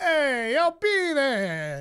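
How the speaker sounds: put-on loud, drawn-out Italian accent. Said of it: "a Bobby Buds impression of Bobby Buds doing an Italian impression".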